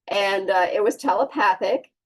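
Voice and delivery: ordinary talk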